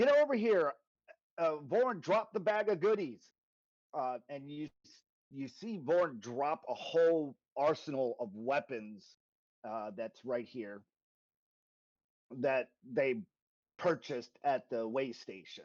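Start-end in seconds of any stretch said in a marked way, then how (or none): 0.0-3.2 high, yelled, barking commanding voice. Voicing a character who calls her people over: character yelling orders. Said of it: "she yells to everyone".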